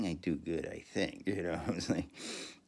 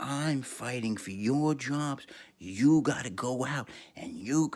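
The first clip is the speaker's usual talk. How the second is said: mock screaming, higher and louder; 7 semitones higher, 6 dB louder than usual. Retelling how a woman screamed at the teachers, imitating someone screaming. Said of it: "she started screaming at us".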